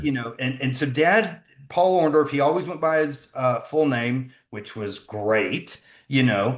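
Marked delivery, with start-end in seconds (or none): 4.5-6.6 heavy, laid-on, dripping sarcasm. Saying the father always went by his full name: heavy sarcasm. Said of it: "layer enough sarcasm on that".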